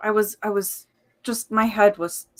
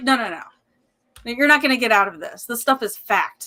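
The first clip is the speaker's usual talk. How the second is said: put-on angry voice, higher; 3 semitones higher, 4 dB louder than usual. Retelling a science teacher's reaction, imitating an angry teacher. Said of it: "was pretty pissed off".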